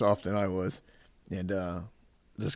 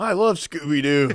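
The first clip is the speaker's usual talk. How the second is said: mocking, teasing put-on voice, higher and louder; 6 semitones higher, 7 dB louder than usual. Repeating a buddy's words to tease him: mocking imitation of a friend. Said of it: "I still give him shit about that".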